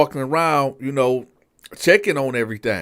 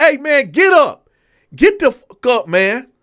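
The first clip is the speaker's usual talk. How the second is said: very high, loud shouted yell; 11 semitones higher, 7 dB louder than usual. Retelling a captain yelling through the bars at an inmate: imitating the captain yelling. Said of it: "he's yelling, yelling in between the bars".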